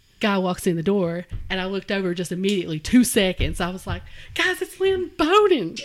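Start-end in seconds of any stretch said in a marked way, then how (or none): 4.4-5.8 very high, loud, excited fangirl freak-out. Retelling seeing a football player walk in: imitating own excited fangirling. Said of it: "I'm, like, fangirling out".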